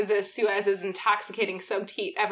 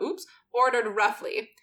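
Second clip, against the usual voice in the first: ordinary delivery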